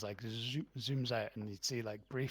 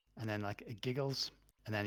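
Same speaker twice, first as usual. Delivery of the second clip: ordinary talk, nothing marked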